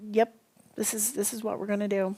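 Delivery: put-on flat deadpan delivery. Speaker retells how her husband answered her question, imitating his deadpan reply. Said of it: "Deadpan looks right at me".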